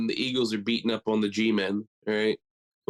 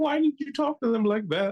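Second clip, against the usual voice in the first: mock distressed and upset, very high-pitched; 13 semitones higher than usual. Retelling how a friend at the bar reacted: imitating an upset friend. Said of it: "visibly upset".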